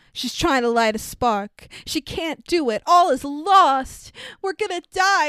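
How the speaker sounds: dramatic build, rising in pitch and slowing. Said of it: "I'm gonna just build this the fuck up".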